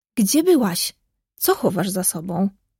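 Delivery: openly surprised, questioning tone. A sister questions another sister who has just come in, surprised. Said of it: "Spytała Małgosia ze zdziwieniem".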